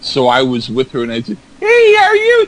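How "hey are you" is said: very high, very loud, squealing puppet voice. Speaker retells what he said to his girlfriend, in his puppet voice. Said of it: "I do a puppet voice".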